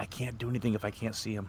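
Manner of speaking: hushed stage whisper. Whispering back to a comrade who whispered first: stage whisper. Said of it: "So I will whisper back".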